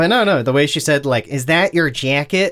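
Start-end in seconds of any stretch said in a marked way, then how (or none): 1.3-2.5 mock, put-on Chicago accent, slower pace. Quoting how a woman said something, the speaker imitates a Chicago accent. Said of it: "the nuance of the Chicago accent".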